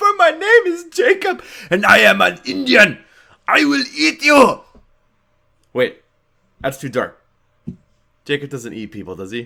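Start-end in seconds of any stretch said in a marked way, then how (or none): 0.0-4.6 put-on very loud, booming, very high Russian-sounding accent. Speaker plays Jacob addressing Bella, Jacob voice with Russian-sounding accent. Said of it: "Indian sound Russian?".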